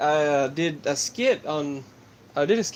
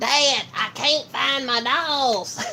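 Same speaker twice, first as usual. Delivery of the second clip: put-on high-pitched cartoon boy voice; 9 semitones higher than usual. Doing a run of cartoon voice impressions, a boy asking his dad; Bobby voice. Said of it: "That's why I messed up the Bobby voice there".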